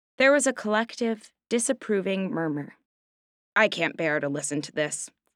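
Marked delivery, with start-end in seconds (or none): 3.6-5.1 growled, growling, much lower pitch. A bear responds to Veronica saying she can do nothing, growled. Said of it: "growled the bear".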